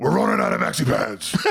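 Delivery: rough creaky high hero voice.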